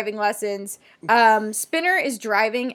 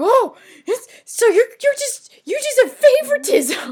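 put-on scream, pitched much higher; 13 semitones higher, 5 dB louder than usual. Retelling a scene: Spinner screaming. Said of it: "Spinner just screams like".

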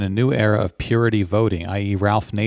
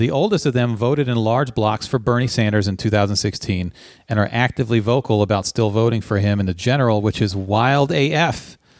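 usual speaking voice

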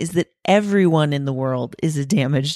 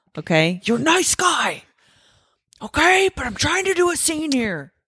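put-on angry yelled rant, higher; 10 semitones higher than usual.

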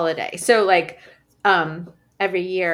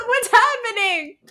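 put-on little old lady voice, much higher. Retelling a neighbor's visiting mother reacting, in a little old lady voice. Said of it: "this little old lady be like".

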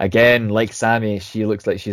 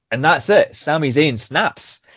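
plain

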